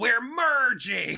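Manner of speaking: very high, shrill screamed outburst. Retelling a movie scene where the villain yells: imitating Dennis Hopper screaming. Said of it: "Dennis Hopper screams".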